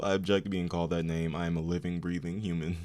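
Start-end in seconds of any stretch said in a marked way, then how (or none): none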